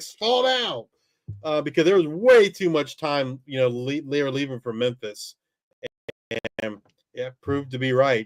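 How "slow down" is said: put-on shrill, very high screaming yell. Retelling a late touchdown run while watching on tv: imitating someone screaming. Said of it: "I was screaming at the T V".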